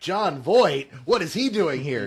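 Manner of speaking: mock voice dripping with disdain and scorn. Mimicking another speaker's tone about an actor: imitating a friend's disdainful tone. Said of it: "you had that tone in your voice like".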